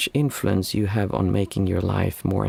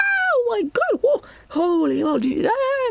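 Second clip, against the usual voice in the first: put-on very high, swooping, drawn-out, awestruck, thrilled kid squeals. Describing how any child would react to the sight, imitating a thrilled child. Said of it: "just so thrilled to see that".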